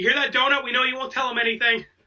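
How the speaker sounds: high-pitched scream as if to someone far away. Retelling a scene where someone thinks Donut is getting tortured, imitating a scream. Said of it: "And he screams like".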